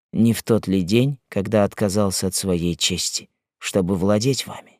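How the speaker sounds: ordinary delivery, nothing marked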